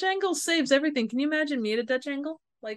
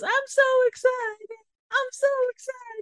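very high, stretched-out, drawn-out, wired voice; 12 semitones higher than usual. Describing a Saved by the Bell scene, imitating Jessie from Saved by the Bell on caffeine pills. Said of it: "when Jessie gets on the caffeine pills and she goes".

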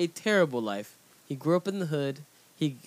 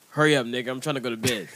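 put-on comedic voice, lower pitch; 3 semitones lower than usual.

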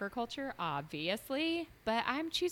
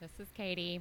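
deadpan, flat, unenthused, low and soft; 6 semitones lower, 6 dB quieter than usual. Introducing herself when it is her turn, not sounding excited. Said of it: "Don't sound so excited".

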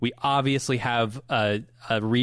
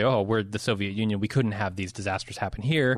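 ordinary delivery

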